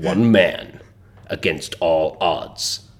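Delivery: slow, generic film trailer narrator voice. Demonstrating his generic film voice, in a movie trailer voice. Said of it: "the voice that like you hear on the trailers".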